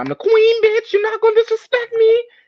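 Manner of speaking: very high, shrill, rising, fierce furious yelling. Recalling a fight, the speaker repeats what the listener yelled, retelling someone's yell. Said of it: "And I remember you yelling like".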